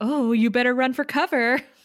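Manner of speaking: sarcastic character voice. Retelling a scene between characters, doing Halfrek's voice, mock-sarcastic.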